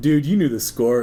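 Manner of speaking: usual speaking voice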